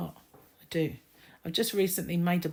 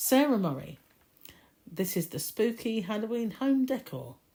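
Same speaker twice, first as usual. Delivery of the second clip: swooping voice, stifled laughter held back; 4 semitones higher than usual. Speaker moves on to the next item, holding back a laugh. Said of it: "I'm trying not to laugh".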